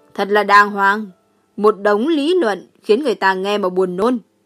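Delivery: scornful, contemptuous mockery with a laugh. One character mocks another's lofty reasoning, laughing scornfully. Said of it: "lập tức cười phá lên, khinh miệt nói".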